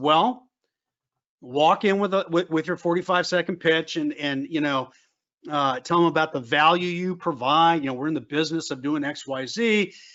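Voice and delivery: ordinary talk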